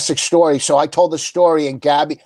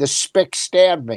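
ventriloquist dummy voice. Retelling a bit where the dummy talks right after being stabbed: dummy's voice. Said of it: "In the dummy's voice".

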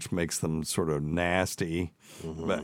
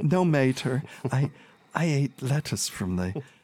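put-on little kid voice, much higher; 7 semitones higher than usual. Retelling a girl's answer to her mother, in a little kid voice. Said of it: "I'm just trying to do a little kid".

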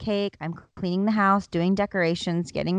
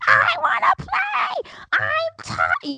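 put-on very high, very slow, swooping toddler wail; 3 dB louder than usual. Retelling a child held at night who keeps screaming: imitating a screaming child. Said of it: "just screaming".

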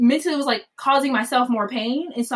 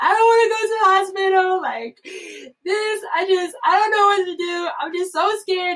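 play-acted high, tearful bawling and sobbing; 8 semitones higher than usual. Retelling own answer to someone's questions back then, imitating own bawling, crying. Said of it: "And I just start bawling, crying".

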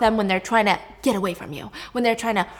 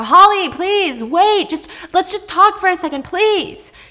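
acted-out high, loud shout; 9 semitones higher, 6 dB louder than usual. Retelling a man screaming after a woman who ran back inside, retelling a scream. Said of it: "he's screaming after her".

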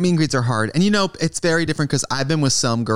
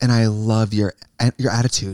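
mock earnest delivery, lower pitch; 4 semitones lower than usual. Retelling what a fan said at a meet and greet: imitating an earnest fan. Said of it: "she was so earnest".

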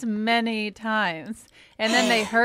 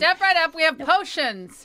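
carnival barker voice, much higher; 6 semitones higher than usual. Joining a co-host's bit introducing the show, in a carnival barker voice. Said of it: "You sound like a carnival barker".

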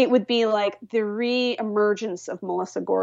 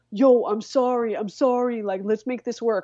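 put-on New Jersey accent. Quoting Louis from a leaked video, in his New Jersey accent. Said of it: "in his jersey kind of accent".

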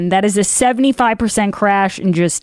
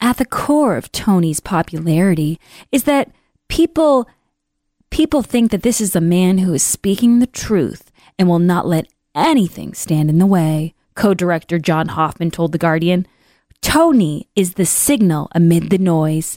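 put-on seductive, come-hither sexy reading voice. Reading an article about Fauci aloud: mock sexy voice. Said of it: "I'm reading in my sexy voice".

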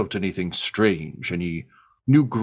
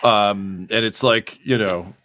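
plain

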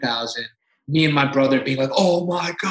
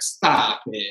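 put-on sassy voice, lower pitch; 5 semitones lower than usual. Retelling the agent's reply about money: imitating a sassy agent. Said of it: "he's still like that".

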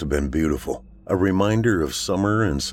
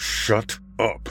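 spoken through gritted, clenched teeth; 4 semitones higher, 3 dB quieter than usual. Narrating a story, Dacry answers Margot: through gritted teeth. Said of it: "Dacry speaks through gritted teeth".

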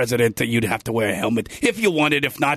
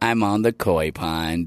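put-on cartoon dog voice; 8 semitones lower than usual. Doing an impression when another speaker asks: Droopy Dog voice. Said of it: "Do Droopy Dog".

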